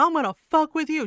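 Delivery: fierce high-pitched yelling. Telling a friend how a woman confronted a man, you act out her words, retelling a yell. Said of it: "she's yelling at him".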